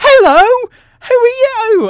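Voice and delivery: shrill, booming, very high, loud, slow-stretched shout. Retelling how the presenter in dungarees greets the cinema: imitating Daisy shouting. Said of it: "and she shouts".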